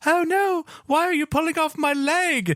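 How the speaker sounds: put-on tiny, very high-pitched voice with British accent. Laughing about a game's poor elephant, voicing it, little British elephant voice. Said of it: "in its little British voice is just like".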